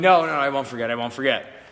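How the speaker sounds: usual speaking voice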